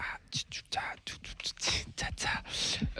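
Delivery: soft, hesitant, whispered mumbling under breath.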